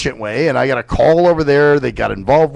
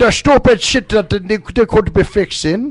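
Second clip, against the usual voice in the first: poor put-on Irish accent, much higher pitch; 6 semitones higher than usual. Asked to say it like a German, the speaker slips into a Lucky Charms guy accent. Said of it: "That's not German".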